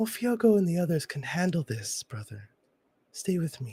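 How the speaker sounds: very gentle, unforced delivery. A familiar voice from memory speaks to you in a very soft voice. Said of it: "with a very soft voice, just says".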